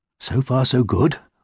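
slow, hushed stage half-whisper, unhurried. Narrator reads a hen's line as she and a mouse work; half-whispering. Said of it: "whispered the little red hen".

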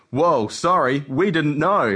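ordinary delivery

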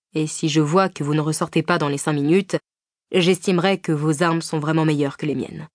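plain

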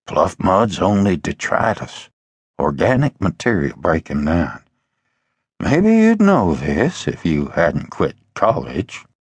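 dry, needling, hushed half-whisper. Unc, behind the narrator in the boat, correcting him: half-whispering. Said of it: "Unc whispered from behind me".

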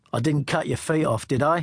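plain

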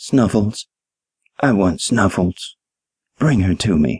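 put-on feeble, frail old lady voice, weak, barely holding on. An old lady lifts her head from the pillow to answer, frail half-whisper. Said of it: "In a frail voice, the old lady lifted her head and whispered".

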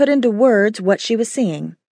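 ordinary delivery, nothing marked

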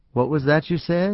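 soft, quietly spoken voice. The little man, looking at George in the growing darkness, asks softly. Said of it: "He asked softly".

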